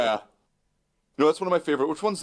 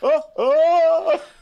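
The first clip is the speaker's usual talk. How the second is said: high, cackling laugh, put-on impression. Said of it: "The way that he laughed every single time".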